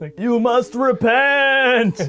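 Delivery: high haunting ghost voice, "repent" drawn out. Showing how your impression comes out sounding wrong, in a Bernie Sanders voice like a ghost. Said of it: "My Bernie Sanders sounds like a ghost".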